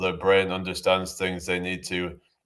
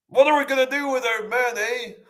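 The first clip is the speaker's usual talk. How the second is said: put-on very high-pitched Canadian accent, with added eh. Showing off a Canadian accent, then doing a Jordan Peterson impression. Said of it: "there's this Canadian guy that I can do an impression of".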